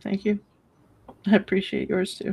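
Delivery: high, tearful speech, talking through crying. Thanking someone who praised her personality and humor, crying while talking. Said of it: "if you would stop crying".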